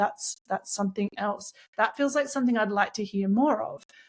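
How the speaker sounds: ordinary talk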